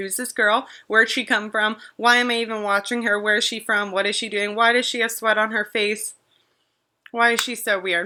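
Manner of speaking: ordinary talk, nothing marked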